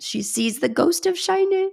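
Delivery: high, tearful, crying voice. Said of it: "I've already started crying on the podcast".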